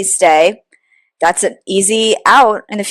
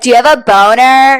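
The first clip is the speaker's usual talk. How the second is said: put-on scream, shouted out across a distance; 4 semitones higher, 4 dB louder than usual. Recounting a woman yelling at a man across a pond: imitating someone screaming. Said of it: "Screaming at him across the pond".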